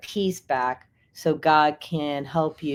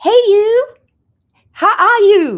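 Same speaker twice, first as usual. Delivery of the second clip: put-on Illinois accent, very high and loud; 12 dB louder than usual. Retelling how she greeted you as you left the office at Christmas, imitating a woman's Illinois voice. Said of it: "with her good Illinois voice".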